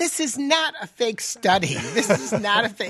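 genuine laughter through the words.

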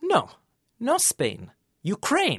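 slow, deadpan, dead serious delivery. Retelling a confused man's reply when pointed to the south, mimicking deadpan seriousness. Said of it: "with deadpan seriousness said".

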